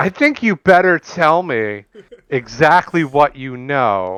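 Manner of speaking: put-on clichéd, old-fashioned, old-timey tough-guy menace. A player in a tabletop game threatens an elf, in an old-timey cliché intimidation. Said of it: "I'm doing like the the old timey cliche".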